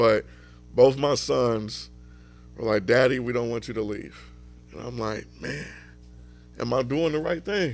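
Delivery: fighting tears while speaking, choked up. A father talks about his sons, holding back tears. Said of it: "I'm trying not to cry now".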